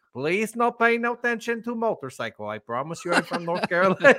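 put-on Russian accent, high, broken English. Retelling a phone call from a Russian guy: Russian accent. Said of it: "some Russian dude calling me".

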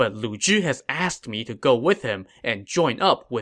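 ordinary delivery

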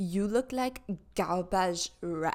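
put-on French accent. Opening No One Asked by quoting a guy from a TikTok video, in a French accent. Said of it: "he has like a French accent".

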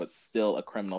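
ordinary talk, nothing marked

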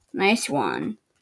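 low, soft, unenthusiastic, unimpressed delivery.

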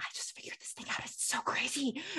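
very quiet, soft, breathy, secretive whisper. Retelling what the other speaker whispered to them, imitating a whisper. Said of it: "you like whispered it to me".

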